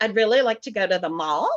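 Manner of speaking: put-on valley-girl uptalk, pitch rising at end on mall. Criticizing valley girl speech patterns, rising pitch at sentence end. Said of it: "If your pitch at the end of your sentences goes up, like".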